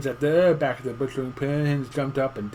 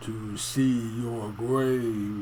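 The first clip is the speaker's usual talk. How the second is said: deep, hollow chimney voice, very slow; 3 semitones lower than usual. Narrator reading a story, a voice up the chimney answers the old man: deep, hollow voice. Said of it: "said a deep, hollow voice up the chimney".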